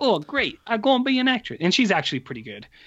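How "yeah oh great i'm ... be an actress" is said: put-on Brooklyn accent, pitched high. Retelling how the girl answers the offer to become an actress, in a Brooklyn accent. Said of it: "She's doing this like. Brooklyn accent".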